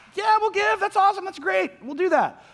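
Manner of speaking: very high, eager voice. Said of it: "they're like".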